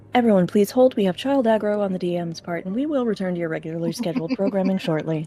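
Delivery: polite, scripted customer service voice. The dm announces a pause to the players in a customer service voice. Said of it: "Customer service voice incoming".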